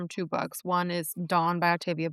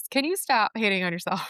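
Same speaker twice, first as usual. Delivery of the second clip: scolding, telling-off teacher voice; 2 semitones higher than usual. Speaker scolds someone who keeps apologizing for themselves, scolding teacher voice. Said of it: "I'm scolding you in my teacher voice".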